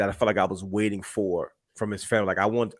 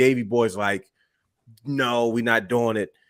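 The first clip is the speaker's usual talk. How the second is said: usual speaking voice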